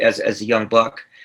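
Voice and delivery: normal talking voice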